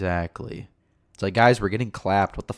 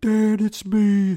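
mock screaming woman voice, higher and louder; 14 semitones higher, 7 dB louder than usual. Mocking a loud woman at a concert: imitating a screaming woman. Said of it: "that was just screaming".

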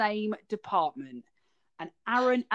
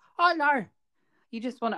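put-on, pitched-up Scottish accent drifting into Irish; 5 semitones higher, 3 dB louder than usual. Acting out what she says next, in a failed Scottish accent, more Irish. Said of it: "that was more Irish".

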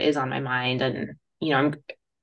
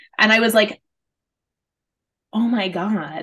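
ordinary talk

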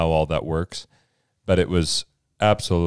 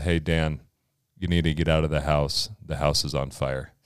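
put-on calm, lower and quieter voice; 3 semitones lower, 5 dB quieter than usual. Retelling walking into Dan's room, imitating your own calm voice back then. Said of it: "who says it calmly like that?".

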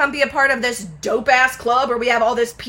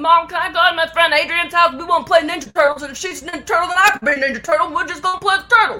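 put-on strong, laid-on, pitched-up southern Alabama accent; 6 semitones higher than usual. Recalling an old preschool video, speaker acts it out in a super southern Alabama accent. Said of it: "with my super southern Alabama accent".

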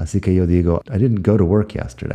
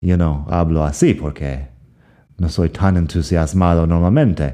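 ordinary delivery

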